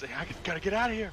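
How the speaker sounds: put-on frantic, shaken, panicky blurt. Retelling how he reacted when stuck: imitating someone freaking out. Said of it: "he's freaking out".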